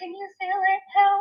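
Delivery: very high, very loud, frantic, panicked scream. A nursing student recounts failing to find a pulse, retelling screaming for help. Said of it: "I'm like screaming for the nurse".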